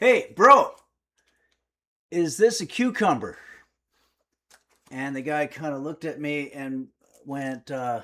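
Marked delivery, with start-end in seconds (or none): 0.0-3.4 very loud, hailing shout. Recounting calling out to a supermarket employee, retelling a really loud call. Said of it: "really loud".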